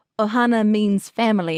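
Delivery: ordinary talk, nothing marked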